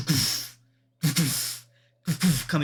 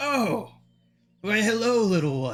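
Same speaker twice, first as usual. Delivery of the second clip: high, slow, drawn-out brass dragon voice; 6 semitones higher than usual. Voicing a brass dragon looking down at a small party member: brass dragon voice. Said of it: "And then he finally looks down and says".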